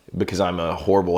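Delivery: ordinary delivery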